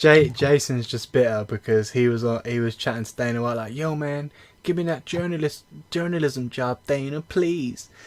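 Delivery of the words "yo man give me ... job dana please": thick, laid-on, high put-on Southern accent. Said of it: "so I'll I'll take Southern [name]".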